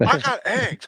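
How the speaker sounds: very high-pitched comic character voice. Reading off a grocery list as a Harry Caray impression. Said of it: "if you can do that voice, you can say anything as Harry Carey".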